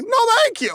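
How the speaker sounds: put-on very high-pitched, old-Hollywood movie style voice. Showing how the Jimmy Stewart line should sound: Jimmy Stewart impression. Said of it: "it's more like".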